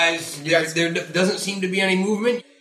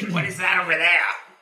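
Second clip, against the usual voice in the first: put-on fantasy monster goblin voice. The narrator tells the players they hear a goblin speak: goblin voice. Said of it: "You hear a goblin voice say".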